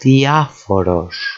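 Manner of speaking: diaphoros, stress on the third-to-last syllable, a. Speaker pronouncing the first of three greek words, stressing diaphoros on the third syllable. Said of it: "the third syllable emphasized on the first word".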